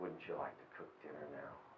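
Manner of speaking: soft, alluring, tempting, seductive coaxing. Imagining a motivating voice inside someone's head, put-on seductive voice. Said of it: "a voice that's seductive".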